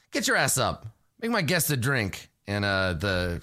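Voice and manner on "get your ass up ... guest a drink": curt, high-pitched snapping. Voicing a character who snaps at one of two people on a couch: snapping at someone. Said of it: "snaps at one of them".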